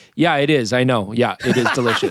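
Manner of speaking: put-on very confident, self-assured woman's voice. Retelling how the restaurant lady answered a compliment: imitating a very confident lady. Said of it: "you're very confident".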